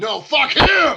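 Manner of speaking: raging barbarian battle yell, very high and loud. Voicing a raging character fleeing a collapsing building: raging shout. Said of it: "raging, running out the door".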